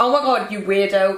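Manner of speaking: ordinary talk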